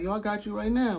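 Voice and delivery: very high-pitched voice. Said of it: "You know how his voice is".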